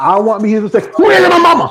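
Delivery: loud high-pitched shout.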